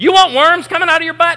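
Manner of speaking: fed-up, exasperated, very high-pitched and loud. Speaker retells Amy urging their kids, imitating Amy's exasperated voice. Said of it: "with an exasperated voice going".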